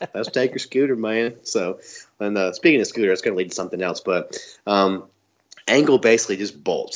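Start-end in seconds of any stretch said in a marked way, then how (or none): 0.1-1.4 put-on rural Southern hog farmer accent. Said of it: "it sounds just like that".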